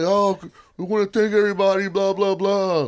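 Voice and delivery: mock flat dull delivery. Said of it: "This ain't gonna be boring like a".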